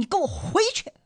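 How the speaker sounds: put-on big roar, high and loud bellowed shout. Speaker imagines yelling at the rushing floodwater to go back, acting out a yell. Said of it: "我会不会就朝他大吼一声".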